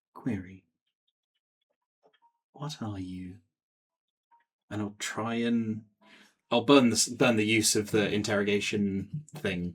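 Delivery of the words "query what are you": hushed, very soft, barely above a half-whisper. Voicing a character questioning a violin, barely above a half-whisper. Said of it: "this is barely above a whisper".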